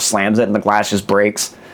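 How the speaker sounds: plain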